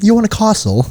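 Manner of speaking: put-on British accent, very high pitched. Joking about a British real estate agent: put-on British accent. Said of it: "Imagine Kyle as a British real estate agent".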